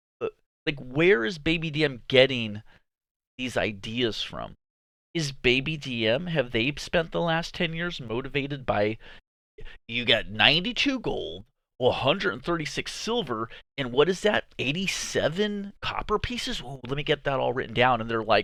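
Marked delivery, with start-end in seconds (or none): none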